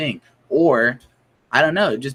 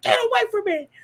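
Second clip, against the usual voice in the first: put-on, very high-pitched panicked outburst. Retelling a man who freaks out on stage, imitating someone freaking out. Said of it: "Freaks out and pushes the dude".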